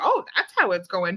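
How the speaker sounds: ordinary talk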